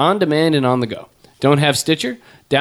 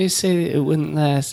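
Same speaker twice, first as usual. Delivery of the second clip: soft, high-pitched, breathy voice; 4 dB quieter than usual. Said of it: "he's like".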